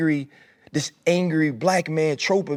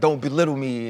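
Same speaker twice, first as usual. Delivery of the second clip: put-on raised voice; 3 semitones lower than usual. Retelling a colleague raising his voice during a TV segment: imitating a raised voice. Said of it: "he raises his voice at me".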